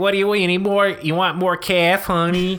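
put-on sassy, loud, high voice with East Coast accent. Imitating a droid waitress from the movie: imitating waitress with East Coast attitude. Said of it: "waitress even has an East Coast attitude".

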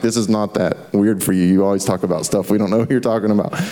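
usual speaking voice

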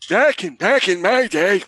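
put-on elderly voice. Answering a viewer's request, the host says the phrase in an old person's voice. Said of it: "with an old person's voice".

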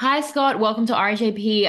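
worn-out strained voice. Welcoming a guest to the show, voice worn out after concert. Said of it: "I'm sorry about my voice".

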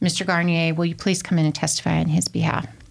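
ordinary talk, nothing marked

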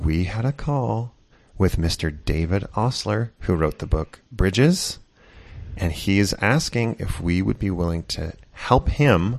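hushed voice. Sharing a secret teaser with listeners, talking in a quiet voice. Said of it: "You're talking in a quiet voice".

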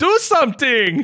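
very high, desperate, frantic yell. Retelling a movie scene where a character yells at another: imitating someone yelling. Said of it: "He actually yells at her".

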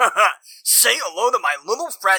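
brash, loud, obnoxious boastful delivery. A heavily armed character shows off each gun, obnoxious loud boasting. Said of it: "real fucking obnoxious about every gun".

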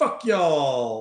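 loud put-on Texan drawl, "y'all" stretched out. Retelling what the recording bot says: Texan accent. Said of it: "my best, best Texan".

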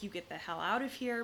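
ordinary talk

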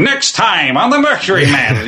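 nasally voiceover voice. Speaker explaining the tone their show avoided, nasally voiceover announcer voice. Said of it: "the nasally a voice, you know, voiceover announcer going".

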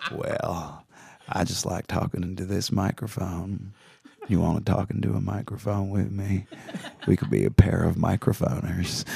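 low, creaky Southern drawl. Showing what "Matthew McConaugheying" sounds like: Matthew McConaughey impression. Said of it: "it's called Matthew McConaugheying".

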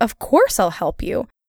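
ordinary talk

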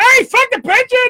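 acted-out, very high-pitched shrieked scream. Describing how Joe, who has Tourette's, yells out: imitating Joe screaming. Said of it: "He screams out".

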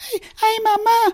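adult's very high-pitched put-on child voice. Speaker shows how dubbing has adults voicing children: adult faking a child's voice. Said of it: "an adult doing a voice like this".

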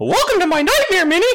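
tiny, high, squeaky voice. Urged by the others to do it on the spot, a Mickey Mouse voice. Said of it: "I do a good Mickey Mouse though".

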